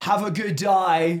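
put-on strong British accent. Retelling a companion's farewell to a confused woman, Harry Potter accent. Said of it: "puts on like a Harry Potter accent".

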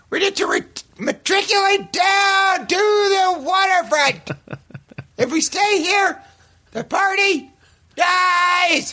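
very high, rowdy, festive yell, "dies" drawn out. Speaker mimics how the listener yells to the group, imitating his yell. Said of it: "Is that a good impression?".

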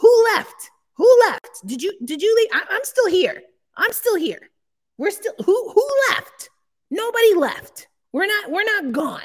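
put-on dramatic yelling. On a podcast, the speaker, not really mad at Larry, yells in dramatic mock anger. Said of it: "I'm being dramatic because it's a podcast".

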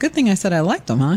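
ordinary talk

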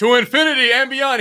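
very high, loud, belted-out joking voice. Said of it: "I would love to hear him be like".

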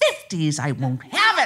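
mock outraged, indignant, furious, swooping and rising. Retelling an angry reply to an inner voice: imitating a furious retort. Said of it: "I was furious".

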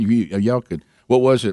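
ordinary talk

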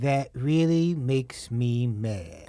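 low, droopy cartoon hound voice. Showing a listener the one voice he does, in a Droopy Dog voice. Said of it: "He's a cartoon".

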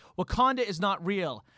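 ordinary talk, nothing marked

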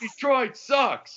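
put-on full-volume shout. Retelling a father screaming during a basketball brawl: imitating a full-volume scream. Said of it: "just on his feet screaming at full volume".

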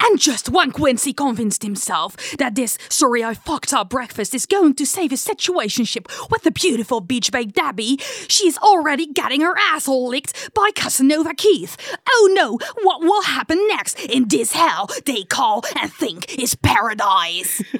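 loud, intense narrator voice, awful American accent. Demonstrating how American shows use voice-over, in a bad American accent. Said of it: "ik heb een heel slecht Amerikaans accent".

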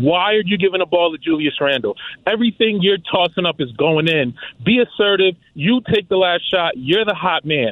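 half-shouted, mildly loud. Retelling yelling at the TV during overtime: retelling yelling at the TV. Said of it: "I'm yelling at the T V screen".

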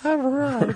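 put-on pitched way up, high, unbroken, boyish squeak.

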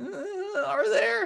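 very high, incredulous mocking tone.

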